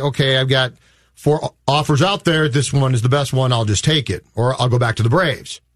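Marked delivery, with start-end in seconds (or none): none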